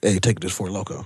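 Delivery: normal talking voice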